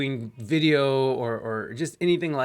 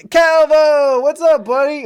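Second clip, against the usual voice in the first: shouting, higher and louder; 14 semitones higher, 13 dB louder than usual. Breaking off a story to greet someone: yelling. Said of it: "I'm, like, yelling into the".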